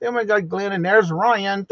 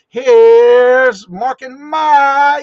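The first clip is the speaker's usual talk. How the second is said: high, very loud announcing call, name drawn out; 5 semitones higher, 12 dB louder than usual. Introducing guests mark and mike, who might not hear: higher, raised voice. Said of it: "give him a little bit higher voice".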